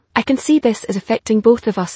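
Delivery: ordinary talk, nothing marked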